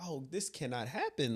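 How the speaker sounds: ordinary delivery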